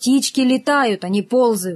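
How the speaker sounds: plain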